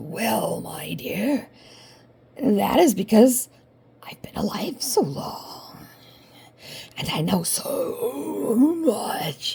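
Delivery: creepy, slow, spooky reptilian voice. Telling a storybook scene, the big bad wolf answers the girl: spooky reptile voice. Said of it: "spooky reptile voice".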